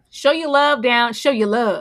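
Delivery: loud, hyped-up, belted-out delivery. Thanking guests and asking the audience to hype them up, in a Steve Harvey voice. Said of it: "in my Steve Harvey voice".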